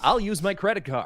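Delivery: put-on American accent. Imitating an American accent to order food: Markiplier voice. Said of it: "Okay, Markiplier".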